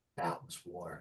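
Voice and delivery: very quiet, low, hushed, barely-there murmur. Game master voicing Siana, speaking privately to Rowan; very quiet. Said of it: "she'll very quietly say to you".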